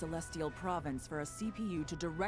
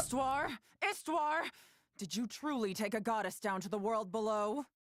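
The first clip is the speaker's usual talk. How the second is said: furious, angry voice; 6 semitones higher than usual. Demanding whether a goddess was taken down below: angry. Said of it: "they sound so angry".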